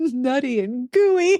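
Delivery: breaking up in high, helpless, uncontrollable laughter. Co-host recording an episode, repeating a phrase: laughing out of control. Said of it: "I just lose control of myself".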